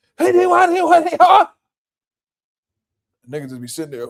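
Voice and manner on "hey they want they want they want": very high-pitched, shrill, loud yelling in a woman's voice. Imitating a store worker yelling at the cooks: imitating a woman yelling. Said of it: "the women always yelling at the men".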